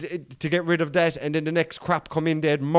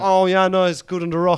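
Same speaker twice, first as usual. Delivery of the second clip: loud put-on pub rugby fan voice and accent; 3 semitones higher, 5 dB louder than usual. Imitating rugby fans in a pub: imitating a rugby fan's accent. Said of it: "Where's your accent come out of, boy?".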